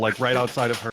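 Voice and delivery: ordinary delivery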